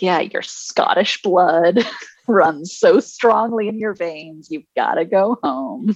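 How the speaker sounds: put-on fancy, posh-sounding transatlantic accent. Act out a woman from the 60s responding to a man, in a fancy accent. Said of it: "doing like a fancy accent".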